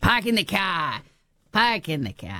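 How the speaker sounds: Boston accent, swooping, animated, sing-song. Speaker tells listeners about the Boston accent, doing a Seth Meyers-style Boston accent. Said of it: "He does a great Boston accent".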